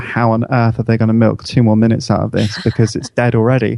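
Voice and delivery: ordinary talk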